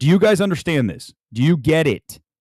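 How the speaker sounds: plain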